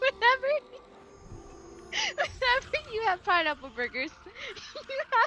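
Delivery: very high, words broken by laughter. Telling a story about pineapple burgers, laughing while talking. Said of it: "I'm laughing too much".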